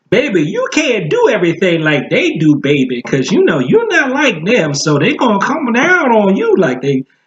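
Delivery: put-on high, sing-song Southern accent, old woman voice. Doing an impression of a grandmother's baby speech, Southern American accent.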